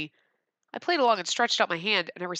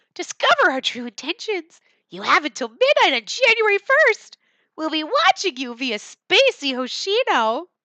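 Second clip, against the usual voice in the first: put-on cartoon mouse voice, poorly done; 10 semitones higher, 9 dB louder than usual. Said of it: "I can't do it right".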